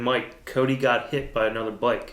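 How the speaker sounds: usual speaking voice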